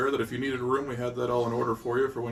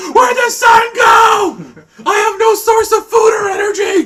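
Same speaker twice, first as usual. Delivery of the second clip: very high, very loud, shrill panicked freak-out; 19 dB louder than usual. Imagining flowers at nightfall, the speaker acts out one freaking out, mock-panicked. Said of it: "And then you go to sleep and it's still talking. / Little vine legs gonna crawl up onto my shoulder".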